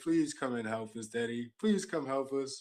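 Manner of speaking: fake sobbing, pleading through put-on tears. Acting out a crying plea heard in the background: mock crying plea. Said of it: "crying, saying".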